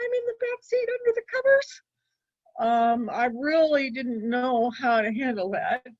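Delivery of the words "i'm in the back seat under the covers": put-on tiny, very high, quick little girl voice. Retelling her answer to a question on the car ride home, in a very little girl voice. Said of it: "in a very little girl voice".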